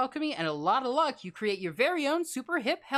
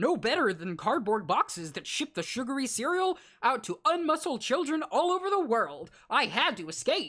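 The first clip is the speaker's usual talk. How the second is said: cartoon tiger mascot delivery. Voicing the coach's sad backstory: Tony the Tiger voice. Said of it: "That's my best Tony the Tiger".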